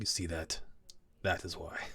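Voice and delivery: soft, hushed whisper under the breath. Retelling what a man whispered aside to the person beside him: whispering. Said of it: "he sort of whispers to Drusilla".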